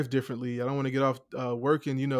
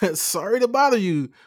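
fake put-on voice, much higher pitch; 8 semitones higher, 5 dB louder than usual.

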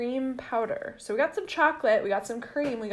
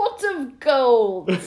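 very loud, bad fake Irish accent drifting into German; 2 semitones higher, 8 dB louder than usual. Asked over drinks to give an Irish accent, speaker tries a bad Irish accent. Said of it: "That sounds German".

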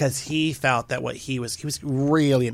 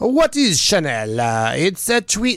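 botched French accent sounding Italian, loud and swooping; 5 semitones higher, 6 dB louder than usual. On a podcast, the speaker tries saying a brand name in a french accent that comes out italian. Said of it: "That's Italian".

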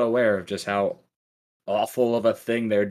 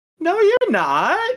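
put-on very childlike voice, much higher and slower; 7 dB louder than usual. Describing a character's line in the dub, very childlike voice. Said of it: "very childlike".

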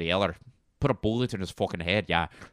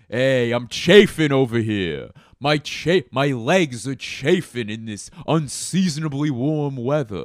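put-on New York accent; 4 semitones higher, 6 dB louder than usual. Running through accents for listeners, doing a New York accent. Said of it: "New Yorker accent".

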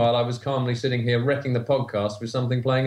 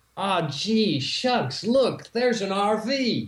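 British speaker's put-on American accent, pitched up; 8 semitones higher than usual. British guest asked to do an American accent for them: British take on an American accent. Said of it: "do an American accent for us".

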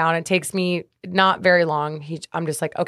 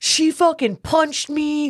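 put-on very high, shrill, frantic scream; 9 semitones higher than usual. Retelling what the security guard said after being punched: imitating someone screaming. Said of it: "screaming that I punched him".

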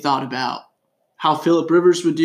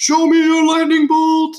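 much higher, louder, slow radio-host hype call. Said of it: "popularized the phrase".

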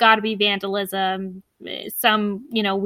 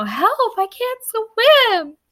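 put-on girl's scream, much higher and slower; 13 semitones higher, 4 dB louder than usual. Speaker retelling how Maggie fell into the water, imitating her scream. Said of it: "she falls into the water and screams".

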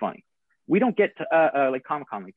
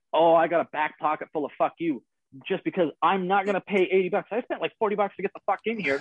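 loud, shouted outburst with a higher pitch; 3 semitones higher than usual. Retelling being surrounded and told to keep the voice down: retelling a loud outburst. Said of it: "you got to keep your voice down".

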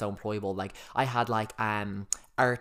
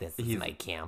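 put-on deep, old-school Bronx New York accent; 4 semitones lower, 4 dB quieter than usual. Retelling what an old man from the Bronx said, Bronx accent. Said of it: "he talks like this, he's from the Bronx".

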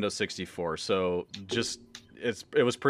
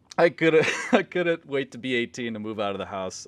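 giggling, laughing through the words; 3 semitones higher than usual. Recalling wanting to move out at eighteen, laughing while talking. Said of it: "I'm sorry for laughing".

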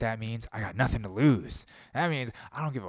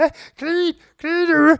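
very high-pitched, very loud screeching voice; 13 dB louder than usual. Imitate a man having a full-on withdrawal attack, as Jordan Peterson in benzo withdrawal. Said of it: "what he sounded like when he was withdrawing from Benzos".

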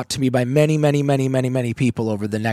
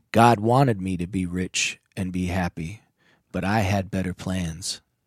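mock choked-up, halting voice, catching; 5 semitones lower, 4 dB quieter than usual. Retelling a man's answer at an AA meeting, imitating someone choking up. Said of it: "he choked up and his eyes glassed over and he said".

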